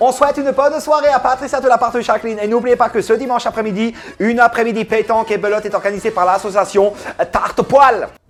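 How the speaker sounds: put-on Alsatian accent. Imitating local radio hosts reading listener dedications, in a strong Alsatian accent. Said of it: "un fort accent alsacien, et quand ils faisaient des dédicaces, ça donnait ça".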